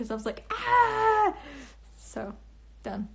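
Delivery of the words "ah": high, loud, excited squeal. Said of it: "I got all excited".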